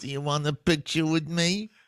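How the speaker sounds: put-on whiny voice. Imitating someone asking people on New York streets: whiny Dice voice. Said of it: "the whiny Dice voice".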